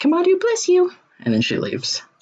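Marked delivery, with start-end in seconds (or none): 0.0-0.9 tiny squeaky voice, much higher. A game master voices a character who has just healed a player, small squeaky voice. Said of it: "in sort of a, a small, squeaky voice".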